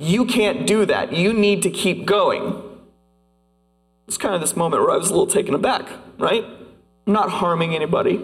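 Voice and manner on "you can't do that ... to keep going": cutting, very harsh, stern, overdramatic delivery. Retelling what a person said when stopping the speaker, retelling a very harsh rebuke. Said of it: "said very harshly".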